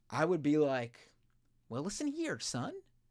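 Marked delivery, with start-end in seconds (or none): 1.6-2.7 soft cartoon cricket character voice. Speaker imagining advising the U.S. president as his conscience, Jiminy Cricket voice. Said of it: "Doing my best Jiminy Cricket".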